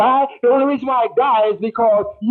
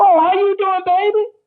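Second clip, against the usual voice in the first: put-on high, lively, upbeat, energized voice; 8 semitones higher than usual. Imitating someone calling while you have a headache, imitating an energized voice. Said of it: "their voice is so energized".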